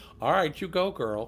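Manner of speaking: ordinary talk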